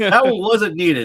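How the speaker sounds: mock exasperated, high, loud, slowed-down complaining voice.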